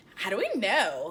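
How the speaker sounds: low, entitled woman's voice. Retelling an audiobook, the speaker imitates the audiobook woman's voice. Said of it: "imitating the voice".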